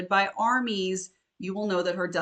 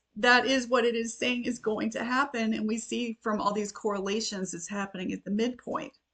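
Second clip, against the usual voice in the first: tearful voice catching, choking up; 3 semitones higher than usual. Discussing a heartbreaking passage about Jerusalem, choking up. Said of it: "Let me try to compose myself here. Sorry, I do cry easily".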